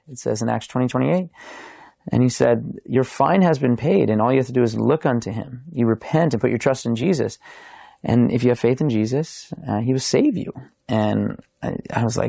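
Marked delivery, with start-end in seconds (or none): none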